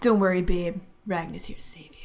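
cool, smooth and suave delivery. A role-play character calls out to a companion during a fight: cool and smooth. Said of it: "saying it all cool and smooth".

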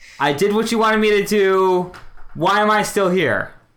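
high, loud, in-character yell. Playing a character who yells into an empty stone room: in-character yell. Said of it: "I'm going to yell out loud".

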